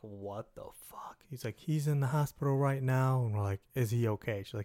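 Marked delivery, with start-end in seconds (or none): 0.0-1.2 stunned, hushed, breathy, whispered shocked tone. Retelling the friends' reaction to an angry mom's call, retelling a shocked reaction. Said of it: "friends shocked by angry mom's call".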